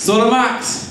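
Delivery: high, slow call, carried far.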